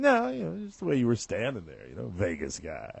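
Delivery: put-on voice, swooping and sing-song. Retelling what his bride said when she picked him up, imitating his wife. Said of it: "'cause I'll do my impression of her".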